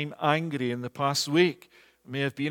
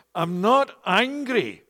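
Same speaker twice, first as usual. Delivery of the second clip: pitched-up anger forced through clenched, gritted teeth; 6 semitones higher, 5 dB louder than usual. Retelling what an elder told his pastor, retelling angry, gritted-teeth words. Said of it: "angrily told his pastor with a clenched jaw and through gritted teeth".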